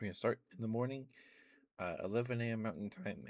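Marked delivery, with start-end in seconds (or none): 2.0-3.3 voice breaking and cracking on the words. Announcing the start time of the twelve-hour stream, voice cracking. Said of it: "Voice crack, sorry".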